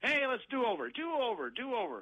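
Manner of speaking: mock very high, stretched-out, drawn-out yell. Retelling how a veteran player called for a retry: imitating someone yelling. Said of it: "he yells out".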